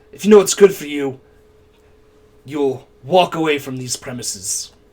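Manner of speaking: haughty, lofty, noble-sounding aristocratic voice. Voicing a noble who looks at the player and warns them: noble-sounding voice. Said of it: "He's trying to say it all noble".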